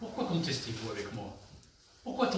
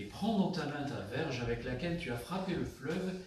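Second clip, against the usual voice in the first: usual speaking voice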